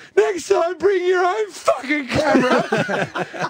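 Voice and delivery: put-on very high, drawn-out tearful yell. Retelling the girlfriend's reply as she bursts into tears: imitating tearful yelling. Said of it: "she bursts into tears".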